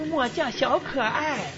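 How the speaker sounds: put-on high, coy, cutesy baby talk voice. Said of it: "他嗲声嗲气的说".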